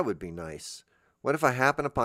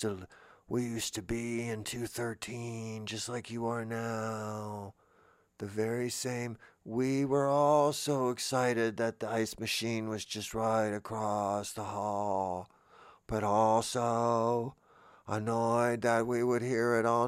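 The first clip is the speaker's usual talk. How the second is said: spooky put-on ghost voice, quieter; 4 dB quieter than usual. Playing a past guest of room 213, addressing its current occupants in a spooky ghost voice. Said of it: "why are they doing the ghost voice?".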